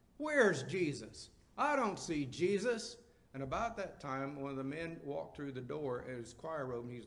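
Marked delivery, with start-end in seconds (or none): 0.2-3.0 put-on very loud, high little-boy voice, blurting. Retelling a little boy in church being told to be quiet, real loud. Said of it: "the little guy says real loud".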